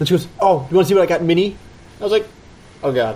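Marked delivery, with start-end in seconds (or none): 0.4-1.6 put-on bubbly, keen, eager and excited. Speaker retells what she said once they got home, imitating her all excited. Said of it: "she's all excited".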